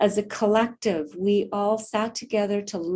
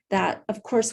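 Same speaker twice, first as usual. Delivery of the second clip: ordinary delivery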